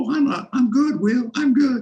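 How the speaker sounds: tiny, squeaky, very high squeak. Remembering a big man's answer when asked if he was all right, do Dexter's squeaky high voice. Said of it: "the big man in the squeaky high voice".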